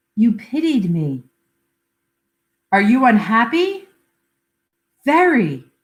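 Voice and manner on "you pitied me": put-on soft as a child's whisper. A woman answers the narrator's question, soft as a child's whisper. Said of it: "soft as a child's whisper".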